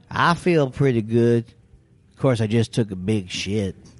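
mock southern comedian voice. Retelling a comic's bit about a comic he worked with: imitating a Southern comic. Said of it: "he was doing his impression of a Southern comic".

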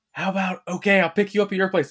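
put-on whisper. Retelling how he comes back and says the line: imitating a whisper. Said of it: "comes back and whispers".

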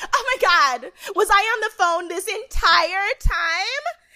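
very high, mocking voice. On a podcast, act out a woman you hate as she leaves the room, mocking Monique impression. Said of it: "She's like".

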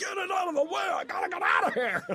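very high, wild, frantic maniac yelling. Retelling trying to drive away from a Renaissance Fair: retelling frantic maniac yelling. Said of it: "I was being a maniac".

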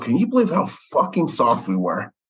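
spoken in a whisper. Retelling what Larry Bird leaned over and said: imitating Larry Bird whispering. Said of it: "leans over and whispers to me".

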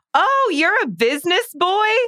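very high, sweet, charming cute voice. Retelling a scene where a coworker gets an award: imitating Leela, charming and cute. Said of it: "so charming and cute to him".

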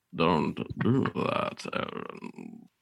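low, slow, loud, creepy voice.

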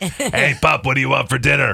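put-on rough, creaky voice of a chain-smoking old lady. Showing how a couple voices their dog, old lady chain smoker voice. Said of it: "Old lady chain smoker".

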